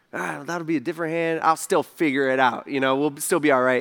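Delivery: normal talking voice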